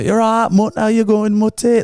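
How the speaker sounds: put-on full Northern English accent. Retelling a parent's phone calls to her own mother: full northern english accent. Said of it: "she'd just go full Northern English".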